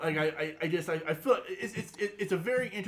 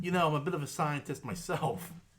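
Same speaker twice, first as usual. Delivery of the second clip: usual speaking voice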